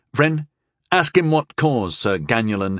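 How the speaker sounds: ordinary delivery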